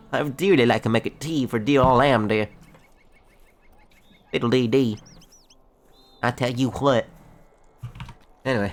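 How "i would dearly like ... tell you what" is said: put-on very strong, thick country accent. Speaker voicing a female character, in a very country accent. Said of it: "I gave her a very country accent".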